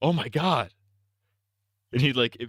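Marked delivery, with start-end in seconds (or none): 0.0-0.7 put-on alarmed voice, higher pitch. Retelling a prank where someone pretends on the phone: imitating a prankster's fake alarm. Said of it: "pretending he's on the phone. He's like".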